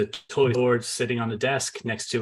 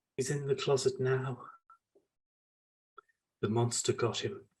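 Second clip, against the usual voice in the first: put-on much quieter whispered boy's voice; 7 dB quieter than usual. Voicing a boy who answers a player's question; whispered child's voice. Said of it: "you hear in a whispered voice".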